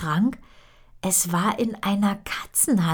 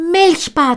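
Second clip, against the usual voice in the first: very high, very loud calling out; 9 semitones higher, 11 dB louder than usual. Calling the kitten's name while tearing open the wardrobe door, calling out. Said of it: "rief Miller und riss die Schranktür auf".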